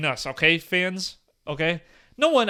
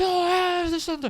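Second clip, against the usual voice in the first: high, shrill, screeching full-throated yell; 13 semitones higher than usual. Retelling a car chase story, the speaker imitates the dude yelling after them. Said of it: "like yelling like top of his lungs".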